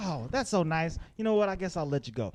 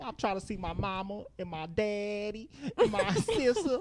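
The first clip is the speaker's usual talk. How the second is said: over-the-top put-on kid voice, higher; 3 semitones higher, 4 dB quieter than usual. Imitating a little kid in a movie who lays it on thick.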